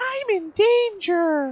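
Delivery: very high, loud squeak, pitch way up. Reading game text aloud, then doing a Ralphie impression. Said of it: "my best Ralphie impression".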